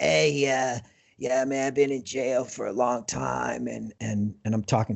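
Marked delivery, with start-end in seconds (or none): 0.0-3.7 rough, slower, put-on older man's voice. Retelling a jail visit, quoting the older inmate in Steve's rough voice. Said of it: "he's got this really rough".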